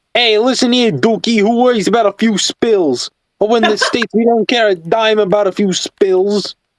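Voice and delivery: laid-on Brooklyn accent. Speakers imagine how a character would sound, trying a brooklyn accent. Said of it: "that sounds like Brooklyn type".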